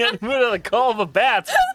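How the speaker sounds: high-pitched, laughing delivery. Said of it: "Things said in a D and D game".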